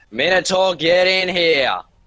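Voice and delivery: full-lung scream, high and drawn out. Voicing a character calling the Minotaur in: screaming at the top of her lungs. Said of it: "screams at the top of her lungs".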